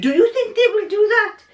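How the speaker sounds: very high-pitched, put-on French accent. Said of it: "in his French accent".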